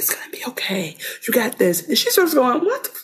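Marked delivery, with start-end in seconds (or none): 0.0-1.9 mock-soothing tone, much quieter. Retelling a man holding his wife's hands to calm her: mock-soothing, like calming a horse. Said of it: "like she's a horse".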